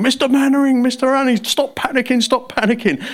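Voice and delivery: high-pitched, panicky, urgently fussing soldier voice. Acting out a flustered soldier telling someone to stop panicking: Corporal Jones voice. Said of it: "it's like a Corporal Jones in Dad's Army".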